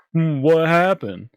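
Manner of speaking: high, slow, dopey, big bumbling oaf voice.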